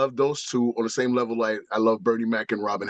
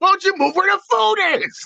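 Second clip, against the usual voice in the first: pushed high and loud, comic; 5 dB louder than usual. Retelling a comedian's desert joke: Sam Kinison impression. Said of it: "the Sam, Sam Kinison, the desert joke".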